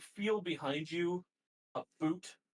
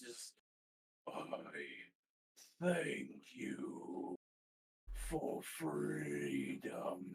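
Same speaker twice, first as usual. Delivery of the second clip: tremulous, breathy giant voice, very slow, drawn out; 11 semitones lower, 6 dB quieter than usual. Speaker retells a voice rising after someone is pulled into lava, in giant shaking voice. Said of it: "you hear this giant shaking voice".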